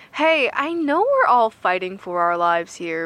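usual speaking voice

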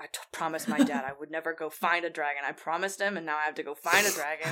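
low, grumbling mutter under the breath. Voicing a sulking character walking to the van: muttering in character. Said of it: "all you can hear is just the muttering of".

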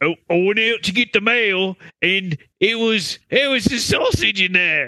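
poor, fake New Zealand accent. Voicing an angry man under discussion, bad New Zealand accent. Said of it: "That is the worst New Zealand accent".

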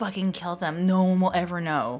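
loud would-be whisper. Threatening anyone in the bar who mocks the queens: loud stage whisper. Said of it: "feels like she's whispering at the volume she just, just said, but it definitely is not".

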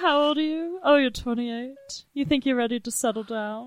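high, coy nineteen-twenties flapper-style voice. Retelling the date talk, imitating Olivia's flapper-like voice. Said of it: "she talks like, like a nineteen twenties flapper".

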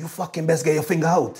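mock fury, fuming and furious. Retelling what he said to the striker giving the ball away: imitating someone fuming. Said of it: "he absolutely fuming keen".

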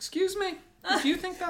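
camp, very high teacher voice. Retelling replying to a young pupil who said you're not the boss: camp teacher voice. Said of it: "Why are you so camp in this?".

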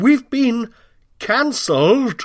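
put-on dismayed cry. Retelling own reaction to bad news: acted crying out in dismay. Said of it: "I cry".

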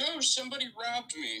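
very high-pitched, distressed, damsel-in-distress cry. Playing a transformed pretty lady claiming she was robbed: yelling as a robbed pretty lady. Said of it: "as you are, like, yelling".

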